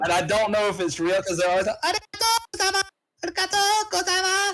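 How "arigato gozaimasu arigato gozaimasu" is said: put-on very high-pitched anime girl voice. Describing how convenience store clerks greet customers, high-pitched anime girl voice. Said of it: "it's that high pitched like anime girl thing".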